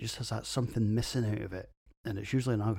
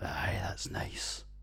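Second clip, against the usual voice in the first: mock mutter under breath, quieter, much slower. Reviewing a beer, the speaker reenacts his own reaction to it: retelling a mutter under breath. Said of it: "made me mutter".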